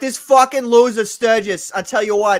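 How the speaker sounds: rough, loud, drawn-out put-on Boston accent. Imitating Katie's accent from private talk: imitating Katie's Boston accent. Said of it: "dirty Boston accent".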